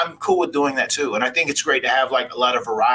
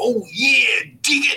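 crazy over-the-top voice, very high, every word stretched; 10 semitones higher than usual. Retelling a line from a wrestler's toy commercial: Macho Man voice. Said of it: "He's talking this crazy voice".

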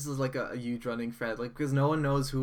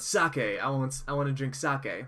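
normal talking voice

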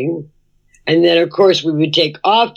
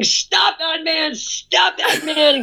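put-on high, drawn-out, stretched screaming; 11 semitones higher, 5 dB quieter than usual. Retelling chasing a man who ran off with her shoes: imitating her own scream. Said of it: "and I'm screaming".

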